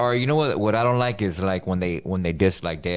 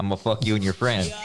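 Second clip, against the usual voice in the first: usual speaking voice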